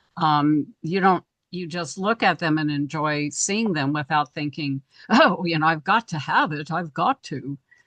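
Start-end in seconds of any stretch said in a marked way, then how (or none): 5.7-7.6 put-on British accent. Speaker acts out a shopper's thought while browsing, in a British accent. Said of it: "with a British accent even".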